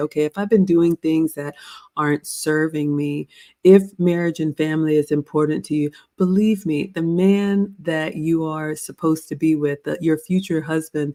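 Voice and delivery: normal talking voice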